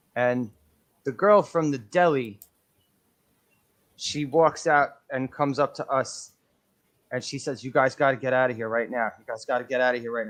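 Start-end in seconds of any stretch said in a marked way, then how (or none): 7.7-10.3 mock grave, dead-serious, no-nonsense tone. Retelling a deli worker telling friends to leave: imitating someone dead serious. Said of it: "dead serious".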